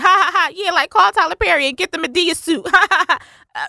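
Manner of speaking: very high, acted-out, sneering "ha-ha" laugh. Retelling how an actress behaved about a costume, imitating her laughing. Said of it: "she's, like, laughing".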